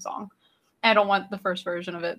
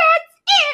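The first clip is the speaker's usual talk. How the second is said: put-on cute little kid voice, very high and loud; 11 dB louder than usual. Retelling a movie scene where a character snaps and pulls a gun: cute little kid voice. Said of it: "it's like this cute little kid voice".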